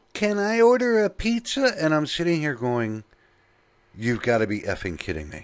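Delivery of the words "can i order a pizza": put-on very high, slow little old lady voice. The speaker retells an unexpected phone caller during dead air, in a little old lady voice. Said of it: "This little old lady's voice comes on".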